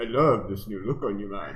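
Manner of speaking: loud, put-on Cajun accent. Told by another speaker to repeat the line, saying it in a cajun accent. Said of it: "You gotta say it with the Cajun accent".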